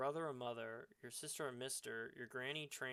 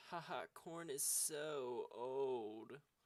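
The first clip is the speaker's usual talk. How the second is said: put-on, heavily emphasized sarcastic tone. Reading out a commenter's remark: imitating Epic's emphasized sarcasm. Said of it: "That's how Epic talks".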